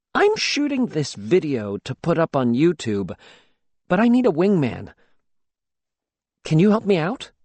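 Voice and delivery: ordinary talk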